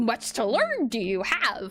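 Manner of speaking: low, deep, gravelly voice. Trying out a gravelly voice deep down, talking backwards: Yoda voice. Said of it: "Let me do voice, Yoda".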